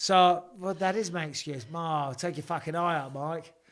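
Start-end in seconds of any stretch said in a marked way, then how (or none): 1.7-3.5 put-on, fake Australian accent. Quoting one of Taito Avas's friends, in a put-on Australian accent. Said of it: "Ever excuse his Australian accent".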